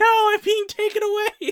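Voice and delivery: very high, loud, shrill squealing scream. Retelling a silly film scene, imitating a screaming watermelon.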